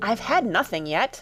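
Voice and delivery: sounding offended. Reading Alice's reply to the March Hare, in an offended tone. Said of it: "Alice replied in an offended tone".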